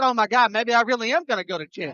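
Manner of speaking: ordinary talk, nothing marked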